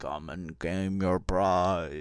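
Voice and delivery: very loud, slow, weird booming voice. Narrating a game scene to a player, voicing a weird booming voice. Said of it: "this weird booming voice sort of says".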